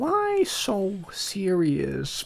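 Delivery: hushed, soft villain voice with big pitch swoops. Showing the others how the Joker would sound: Joker voice. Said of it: "the Joker would sound like this".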